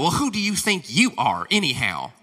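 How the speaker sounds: put-on, critical Southern mama voice. Retelling how everyone criticizes the one chosen as priest, the speaker uses a Southern mama voice. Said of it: "It's Southern mama voice".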